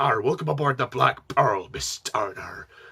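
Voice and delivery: put-on over-the-top, threatening pantomime pirate accent. Describing an actor's over-the-top villain, quoting his line in a pirate accent. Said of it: "pirate accent".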